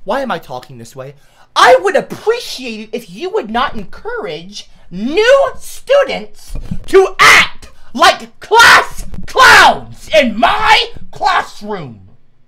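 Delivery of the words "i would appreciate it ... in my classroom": exasperated, frustrated shout, very high and very loud. In class, the speaker tells someone off for encouraging new students, raised frustrated voice. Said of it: "I don't normally raise my voice".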